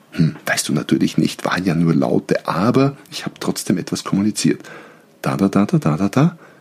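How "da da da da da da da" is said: da-da-da ending with rising pitch. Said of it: "eine Frage".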